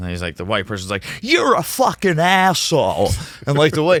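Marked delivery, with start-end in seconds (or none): 1.2-3.1 very high, swooping voice with heavy stress.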